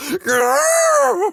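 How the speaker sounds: very high-pitched, loud, garbled, strangled, panicked growl-yell. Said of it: "really just manage to yell".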